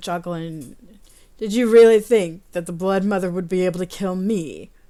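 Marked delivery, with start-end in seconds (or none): 1.4-4.6 dark, heavy, deep, loud voice. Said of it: "And in a deep voice".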